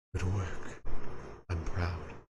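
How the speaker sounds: quiet, low-pitched voice. The storyteller voices an unseen speaker as moonlight falls on the clearing, soft voice. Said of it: "you hear a soft voice".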